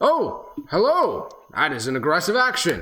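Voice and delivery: high, loud, swooping golem character voice. Voicing a statue golem that was just punched: talking statue golem voice. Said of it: "it looks down towards you and says".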